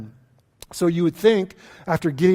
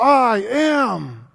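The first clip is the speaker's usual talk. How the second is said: play-acted seething through clenched teeth, "am" drawn out; 5 semitones higher than usual. A speaker acting out a figure's words in the story, through gritted teeth. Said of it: "through gritted teeth and flared nostrils".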